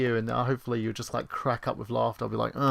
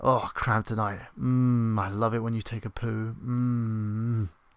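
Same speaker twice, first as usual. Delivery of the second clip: weird, creepy seductive voice, drawn-out mm. Showing how sex talk sounds, creepy sex talk voice. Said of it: "when I do sex talk, it sounds really weird and creepy".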